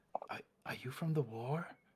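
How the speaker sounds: very quiet, barely-there, seldom-used-sounding voice. A figure scooched closer from the background asks a question in a very quiet, seldom-used voice. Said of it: "says in a in a very very quiet voice that clearly uh, shows that they aren't using it very often".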